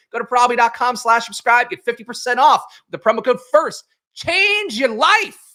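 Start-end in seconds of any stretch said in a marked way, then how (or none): 4.2-5.3 high, preachy, sermonizing preacher voice, proclaiming. Reading a sports betting ad, finishing it in a preacher voice. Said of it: "I don't know where that what that voice was".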